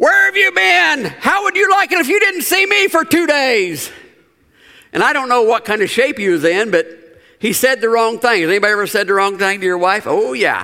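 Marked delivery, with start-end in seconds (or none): 0.0-3.9 mock angry shout, higher. Telling a joke, voicing a mad wife yelling at her husband: imitating an angry yell. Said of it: "she yells out".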